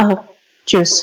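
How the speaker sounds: shrinking, withdrawn, small voice. Retelling how a boy orders juice while hiding his face, very quietly. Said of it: "talks very silently".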